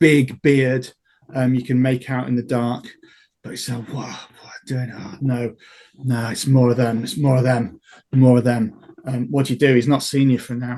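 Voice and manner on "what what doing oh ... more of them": muttering a little wildly to oneself. Narrator voices a man peering in and muttering to himself; wild muttering. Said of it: "muttering to himself um, a little bit wildly".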